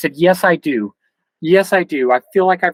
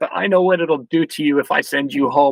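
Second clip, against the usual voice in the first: weeping, tear-soaked, crying voice. Retelling a mission interview where the other man cried: imitating someone crying. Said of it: "he starts to cry, and he says".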